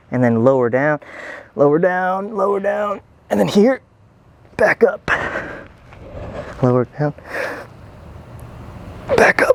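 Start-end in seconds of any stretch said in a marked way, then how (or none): 1.5-9.5 strained, effortful voice, pitched up. Demonstrating the exercise while doing it, strained from exertion. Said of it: "you can hear it in my voice that it is so strenuous".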